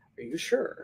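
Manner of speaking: hushed, soft, breathy, even-keeled, matter-of-fact calm. Retelling how the instructor spoke before a belt-test hit: imitating a soft-spoken matter-of-fact voice. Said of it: "his octave never went up".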